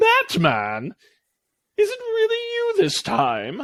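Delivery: very high, snide, snarky, slow, swooping, drawn-out sing-song. As Batman enters the small room, the Riddler calls out to him, snarky Riddler voice. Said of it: "a familiar, snarky voice".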